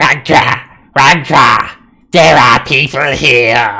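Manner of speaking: very loud, shrill creature call in dragon voice. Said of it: "it hisses. A bit of acid drips from its mouth, and it says".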